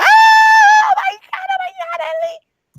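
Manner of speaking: very high, very slow, loud, excited drawn-out shriek. Retelling seeing a reveal trailer: imitating own screaming like a little girl. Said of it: "I started screaming like a little girl".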